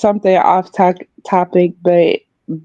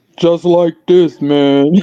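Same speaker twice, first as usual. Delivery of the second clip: forced bass voice, dropped way down; 3 semitones lower than usual. Claiming he can make his voice deeper than yours: put-on deeper voice. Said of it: "I can make my voice deeper than yours".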